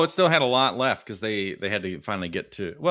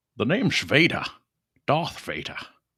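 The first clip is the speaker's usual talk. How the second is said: put-on Scottish accent, higher pitched; 5 semitones higher than usual. Doing a requested impression for another speaker: Sean Connery as Darth Vader. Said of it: "Sean Connery as Darth Vader".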